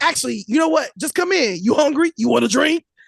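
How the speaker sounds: rapid, growly, barked delivery. Retelling what he said when she arrived, imitating a barking, growling talker. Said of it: "He like barks and growls when he talks".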